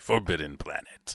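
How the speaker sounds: big radio announcer host delivery. Announcing the movie title in a radio voice: Steve Merkin radio voice. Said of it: "channeling my inner Steve Merkin there, a radio voice".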